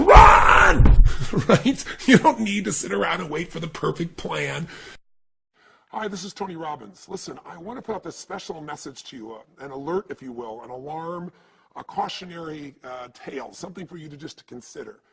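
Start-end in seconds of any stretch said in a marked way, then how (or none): 0.0-1.0 high, loud yell. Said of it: "get behind you and yell".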